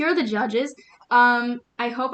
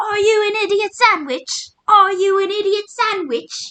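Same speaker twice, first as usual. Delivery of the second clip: high, loud, repeated screaming; 9 semitones higher, 6 dB louder than usual. Retelling a TV chef judging a contestant, imitating Gordon Ramsay screaming.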